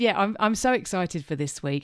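ordinary delivery

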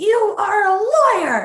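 put-on accusing scream, very high and very slow. Retelling how others suddenly started screaming an accusation: imitating people screaming. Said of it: "they started screaming".

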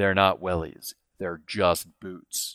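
low, slow and steely delivery. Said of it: "looks at me with a steely grin and goes".

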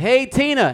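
yelling, high-pitched and loud. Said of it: "drive-by breakups".

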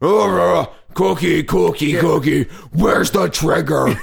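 rough, dragged-out slow delivery. Imitating a puppet from the show: Cookie Monster voice. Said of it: "Cookie Monster on the show, he's always like".

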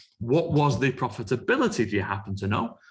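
usual speaking voice

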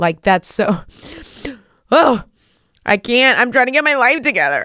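high, emotional choked-up voice. Talking with another speaker, the speaker gets carried away: emotional. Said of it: "I'm so emotional".

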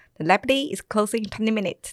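put-on fast Scottish accent with short, clipped vowels. Recalling late nights at the library, the speaker imitates the closing announcement: scottish accent, very short sounds. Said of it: "他们就会用这种很短的音".

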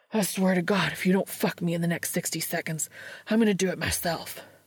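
snarled voice. Narrator reading Dean's line to Cass, snarling. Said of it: "Dean snarls".

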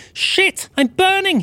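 very high-pitched yelping cry of pain. Reading a christmas story, voicing a figure tumbling from the chimney: yelping. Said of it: "He said with a yelp".

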